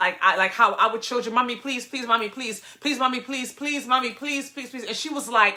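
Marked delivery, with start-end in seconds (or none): 1.3-4.8 put-on childlike begging with repeated pleas. Speaker retelling begging her mother as a kid, imitating a child begging. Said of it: "I begged her".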